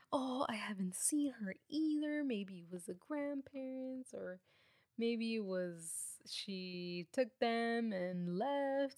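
slow, feigned concern, stretching out she. Retelling the killer's claims, imitating fake worry. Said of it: "supposedly all worried for her".

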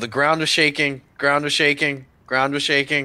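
high, alarmed, calling-out voice, repeated. Running back to warn the group in character: yelling in character. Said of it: "I run back and I yell".

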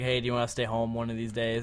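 normal talking voice

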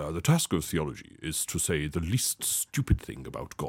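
slow, drawn-out, breathy hushed voice. Quoting a former Archbishop of Canterbury: Rowan Williams impression. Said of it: "I'll try and do my impression".

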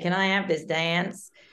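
terrible, bad, fake put-on Canadian accent. Retelling how a man asked a woman to dance on a first date, in a terrible Canadian accent. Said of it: "That's a terrible Canadian accent".

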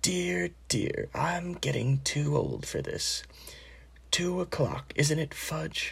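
put-on weak, feeble, frail elderly wizard voice. A very old wizard squints toward Hagrid's cabin, in a feeble voice. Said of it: "said in a feeble voice".

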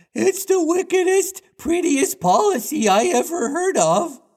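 put-on very high falsetto with chavvy accent, cried out. Reading a story aloud, voicing Smee's line in a Smee voice, chavvy falsetto. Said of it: "Pathetic [name] is described as. / [name], who was rather stupid, / he cried, / I'll do it again like American because they're good. / Like a bit of a chavvy falsetto".

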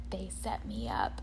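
very low, hushed whisper under the breath. Retelling what a woman whispered to her husband during a break, retelling a whisper. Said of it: "she's like whispering to her husband".

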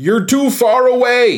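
mock shrill yell, very high and drawn out. Retelling a wedding speech interrupted by the DJ: imitating someone yelling. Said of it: "he yells".

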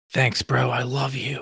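soft, hushed half-whisper. In a tabletop game, a player's character half-whispers back to an ally, half-whispering. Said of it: "I whisper back".

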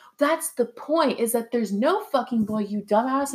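put-on enraged, furious tirade. Retelling how she snapped at a guy's question, imitating someone furious. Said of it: "she got so fucking mad".

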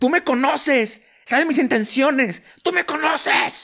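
put-on shrill, very high-pitched yelling. Retelling a bad fight, imitating own past yelling at God. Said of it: "yo le estaba gritando a Dios".

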